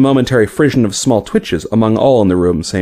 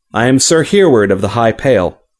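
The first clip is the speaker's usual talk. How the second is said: usual speaking voice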